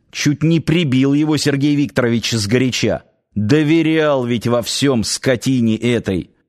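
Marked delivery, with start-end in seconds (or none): none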